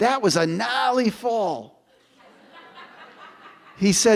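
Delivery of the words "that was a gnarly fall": put-on speaking with a Boston accent. Telling how his best pal looked down at the heap on the ground, in Billy Hannon's Boston accent. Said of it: "with his Boston accent".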